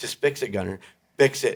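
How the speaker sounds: play-acted, mild, insistent half-shouted yelling. Retelling yelling at the radio during an episode: imitating own yelling. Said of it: "And I'm yelling at my".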